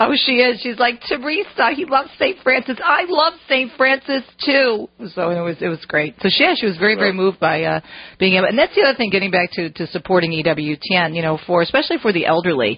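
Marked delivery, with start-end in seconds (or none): 1.1-4.9 put-on Jersey accent, higher, slower. Retelling how Rosie reacted to the news, the speaker quotes her in Rosie's Jersey accent. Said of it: "with her Jersey accent".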